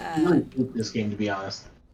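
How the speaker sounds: soft, half-swallowed quiet aside. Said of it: "Say again?".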